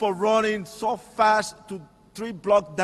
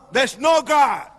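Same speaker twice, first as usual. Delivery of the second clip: high, angry, defiant outburst; 5 semitones higher, 4 dB louder than usual. Speaker acts out his past reply to someone who spoke of God; retelling an angry outburst. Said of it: "And I react with anger".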